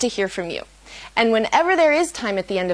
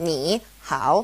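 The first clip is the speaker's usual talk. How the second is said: ni and hao each said with dipping third tone; 6 semitones lower, 3 dB quieter than usual. Showing learners how two third tones sound side by side: both syllables third tone. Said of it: "a third tone and a third tone".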